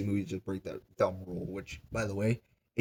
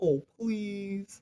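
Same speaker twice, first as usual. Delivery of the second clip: put-on very high little-child begging voice; 12 semitones higher than usual. Retelling a book scene where a character begs for the box: imitating childlike pleading. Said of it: "like a little child".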